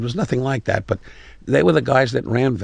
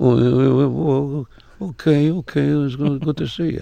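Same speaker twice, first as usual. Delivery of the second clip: high, mumbling put-on impression voice. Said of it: "And he mumbled".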